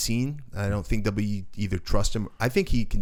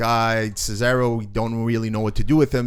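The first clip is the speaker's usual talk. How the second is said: ordinary talk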